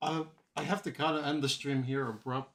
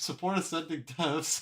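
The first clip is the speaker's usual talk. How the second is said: laughing through words, higher pitch; 3 semitones higher than usual. Telling viewers to support a series, laughing while talking. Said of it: "why are you laughing when you said that".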